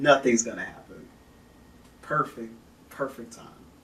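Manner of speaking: dripping with sarcasm. Speaker narrating Roman history to viewers: sarcastic. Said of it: "If you can't tell from the sarcasm in my voice".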